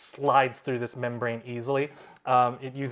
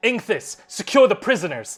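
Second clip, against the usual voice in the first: very loud, high shouted voice; 8 semitones higher, 8 dB louder than usual. A game master voices the captain ordering inkthus mid-fight: captain yelling an order. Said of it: "the captain yells".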